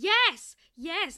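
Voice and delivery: abrupt, loud, sudden shriek. Recounting a scene where a character spots a berry, retelling Laverna's scream. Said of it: "she just screams".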